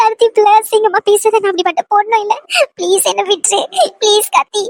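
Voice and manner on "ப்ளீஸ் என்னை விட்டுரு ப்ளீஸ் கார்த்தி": tearful, crying plea. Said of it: "இப்படி அழுதுகிட்டே இருக்க".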